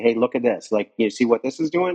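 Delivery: ordinary delivery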